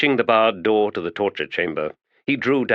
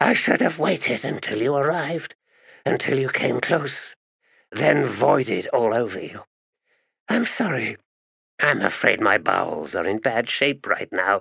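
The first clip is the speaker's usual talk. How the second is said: harsh, grating voice, pitched up; 4 semitones higher than usual. A narrator reads a woman's reply to someone criticizing her appearance: grating voice. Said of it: "she said in a grating voice".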